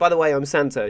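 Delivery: plain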